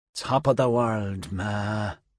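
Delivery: mumbled half to oneself, slow mutter under the breath. As his eyes roll back, a man speaks to his mother, muttered. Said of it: "he muttered".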